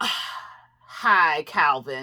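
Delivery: mock snotty, stank-ass attitude, low pitch. Retelling the ex-wife coming over to greet Calvin, imitating her stank attitude. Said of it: "with this stank ass attitude".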